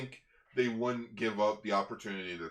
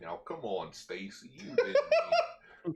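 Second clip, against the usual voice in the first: put-on cartoon dog voice, higher; 8 semitones higher, 3 dB louder than usual. Voicing a villain comforting Stacy in Goofy's voice. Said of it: "Barashitara with Goofy's voice".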